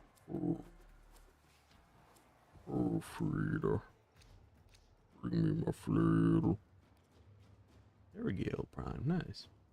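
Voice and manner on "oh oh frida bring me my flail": very deep, very low, slow, dragged, creaky voice. Mimicking a Dark Souls 3 DLC character's dumb voice line: mimicking a Dark Souls 3 character. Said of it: "I would always mimic it".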